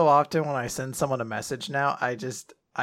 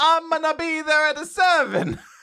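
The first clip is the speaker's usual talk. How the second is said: butchered fake Italian accent, very high; 14 semitones higher, 4 dB louder than usual. Quoting their own text message to people, in a bad Italian accent. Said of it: "bad Italian accent".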